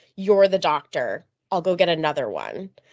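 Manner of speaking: play-acted cheeky, sassy tone. Recounting his reply in the clinic after she yelled for a doctor: mock-sassy reply. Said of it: "he sassily responded".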